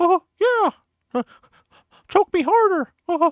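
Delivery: very high, loud, shrill strangled squeak. Joking about how the voice will sound: strangled Mickey Mouse voice. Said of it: "Like fucking B D S M Mickey Mouse".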